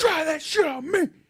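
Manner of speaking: very high, shrill, loud taunting yell. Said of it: "one real good loud".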